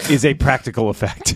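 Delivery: laughing through, high-pitched.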